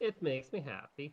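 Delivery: put-on Swedish accent, pitched high, comic voice. Asked what that voice was, the speaker repeats the phrase: Swedish Chef voice. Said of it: "The Swedish chef".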